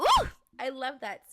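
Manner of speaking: loud, excited burst of delighted yelling. Recording a podcast episode, the host reacts to their own words with an excited yell. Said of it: "I didn't mean to yell in you guys' ear".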